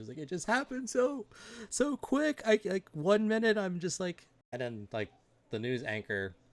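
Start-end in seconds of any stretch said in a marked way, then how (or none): 0.2-4.3 put-on tearful crying voice, higher pitch. Retelling a witness as her tears come down: imitating someone crying. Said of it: "her tears start to, like, come down".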